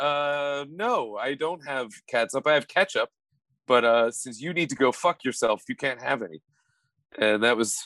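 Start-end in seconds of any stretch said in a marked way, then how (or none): none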